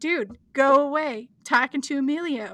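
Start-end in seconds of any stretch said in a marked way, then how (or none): none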